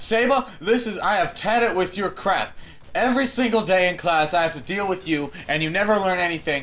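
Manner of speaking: angry telling-off. Retelling being yelled at in the hallway about class, retelling an angry yell. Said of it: "he was yelling at me".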